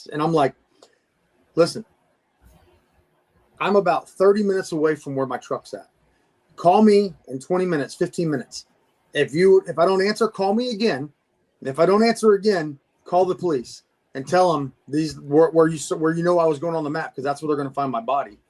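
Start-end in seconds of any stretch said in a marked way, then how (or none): none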